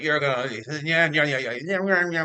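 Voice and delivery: words turned into wah-wah sounds. Retelling how a man who came into the room sounded, Peanuts teacher wah-wah voice. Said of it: "That's what he sounded like".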